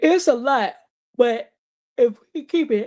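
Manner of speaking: talking through a yawn. Speaking to listeners, apologizing mid-sentence, yawning while talking. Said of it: "Please excuse me for yawning".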